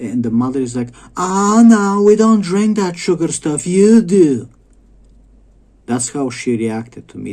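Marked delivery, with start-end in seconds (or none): 1.2-4.5 very loud, shrill, obnoxious raised voice. Retelling a mother's reply when he offered her kid juice, mock-obnoxious raised voice. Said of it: "voice raised".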